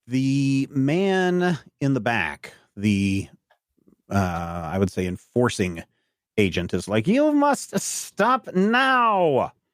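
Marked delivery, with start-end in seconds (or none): 7.0-9.4 put-on odd un-Italian accent, very high and slow. Describing an enforcer character making a threat, weird accent. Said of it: "he's got a really weird accent for an Italian".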